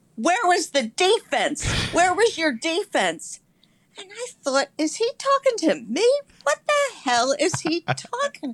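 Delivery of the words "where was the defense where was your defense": mild, accusing, half-shouted yell. Recalling a man at the post office confronting the speaker: retelling a man yelling. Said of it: "he's yelling at me".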